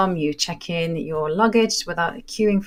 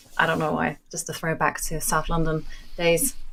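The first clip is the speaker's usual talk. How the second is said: ordinary talk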